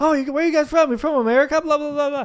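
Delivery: high, loud, chatty American tourist voice. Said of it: "Americans will be like".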